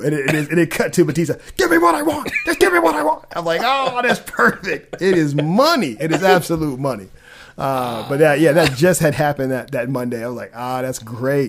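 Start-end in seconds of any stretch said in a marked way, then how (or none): 1.6-3.3 yelling, much higher and faster. Describing a meme about James Gunn that cuts to Bautista, imitating Bautista yelling. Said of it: "He's just yelling".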